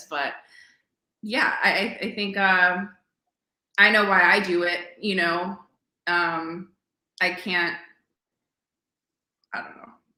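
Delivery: emotional, choked-up, halting, voice catching. Trying to explain why you do it, getting choked up. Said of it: "I don't know why I'm getting choked up at this".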